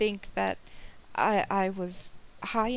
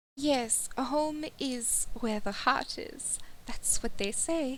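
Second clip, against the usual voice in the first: clumsy, bad, put-on French accent; 3 semitones higher, 4 dB quieter than usual. Speaking in character to fellow travelers, bad French accent. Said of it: "Can you tell I can't fucking do a French accent?".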